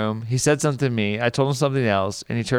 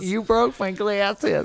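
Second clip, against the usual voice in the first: put-on yelling, higher pitch; 10 semitones higher than usual. Retelling how a reporter on the ground reacted: imitating someone yelling. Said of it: "The guy yells out from".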